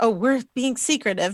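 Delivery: ordinary talk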